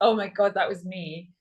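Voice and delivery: normal talking voice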